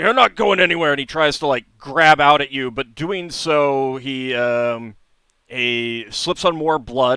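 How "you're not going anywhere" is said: loud, high-pitched words forced out in a grunt. A narrator voices a figure grabbing at you as you try to leave, grunting. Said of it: "he grunts out and he's like".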